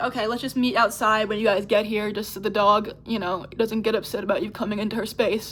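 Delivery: ordinary delivery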